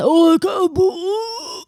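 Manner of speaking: wild, crazy put-on man's voice, drawn out. Acting out a man's answer to a question: crazy impression of a man. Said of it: "That was a crazy impression of a man".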